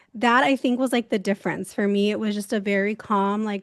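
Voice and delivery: normal talking voice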